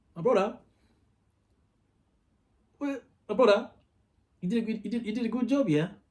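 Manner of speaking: put-on British accent with Nigerian sound. Speaker retelling what a man said back to him, Nigerian-British accent. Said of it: "Motherfucker had a British accent".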